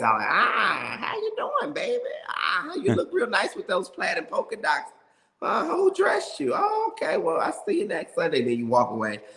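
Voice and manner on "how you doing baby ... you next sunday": very high, sweet, swooping church-lady voice. Imitating a church mother greeting a congregant to their face, in Mother Jenkins voice. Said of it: "So I would do the voice".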